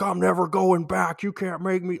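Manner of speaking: loud, high-pitched, hammy, bad sketch-comedy character yelling. Describing a movie robber holding a girl hostage, imitating a bad SNL-style yell. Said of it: "yelling like".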